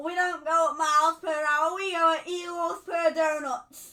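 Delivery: very loud, rubbish, put-on American accent. Asked by the other speaker for an accent, speaker offers a sentence, put-on American accent. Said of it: "give us your American accent".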